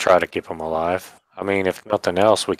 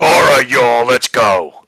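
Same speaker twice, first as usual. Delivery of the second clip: loud, high, raised casual character voice; 6 semitones higher, 7 dB louder than usual. Showing how a companion really talks: Nathan's voice. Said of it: "He doesn't talk like that. It's more like".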